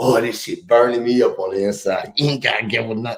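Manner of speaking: quiet muttering under the breath. Retelling a police stop, quoting his own words: imitating talking under his breath. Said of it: "I'm talking under my breath".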